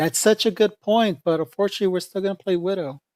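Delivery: condescending, patronizing, talking-down tone. Retelling how she dismisses someone's point: mock-condescending tone. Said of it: "she does that condescending tone. It's like".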